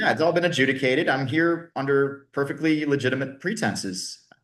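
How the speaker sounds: normal talking voice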